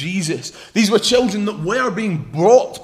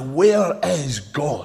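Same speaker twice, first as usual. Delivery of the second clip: put-on deep, stern preacher voice; 4 semitones lower than usual. Telling a story, the speaker voices a preacher questioning a young boy: retelling a stern question. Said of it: "he said to him sternly".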